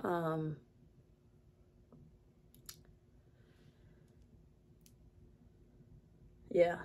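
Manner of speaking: fighting back tears. Explaining how you're really doing without breaking down, holding back tears. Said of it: "I'm trying not to cry right now".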